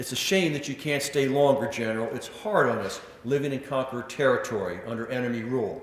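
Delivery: ordinary talk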